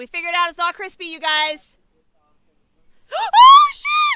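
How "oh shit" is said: shrill, very loud, very high jump-scared yelp. Player reacting during a game with friends, suddenly startled. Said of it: "That scared me".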